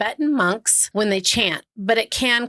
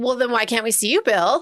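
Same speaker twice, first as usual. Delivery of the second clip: put-on obnoxious, sneering, snide, smug tone. Retelling how investigators questioned a ghost: imitating douchey investigators. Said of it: "They're all douchey about it".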